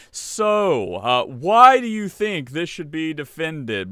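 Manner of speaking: mock patronizing, skeptical, slow, condescending tone. Imitating the justices questioning the lawyer: imitating a condescending tone. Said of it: "it's such a condescending tone".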